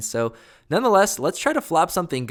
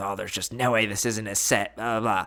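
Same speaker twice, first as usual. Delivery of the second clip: mock muttering under breath, lower and quieter; 4 semitones lower, 5 dB quieter than usual. Retelling what an annoyed opponent said: imitating mumbling under breath. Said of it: "He mumbles under his breath".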